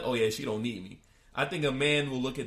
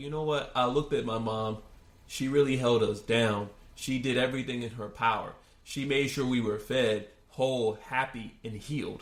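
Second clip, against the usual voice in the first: normal talking voice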